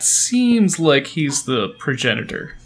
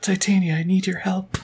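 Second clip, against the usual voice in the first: muttered whisper, much higher; 4 semitones higher than usual. Asked how to get the barrier down, a character whispers under his breath. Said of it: "whispers have... under his breath".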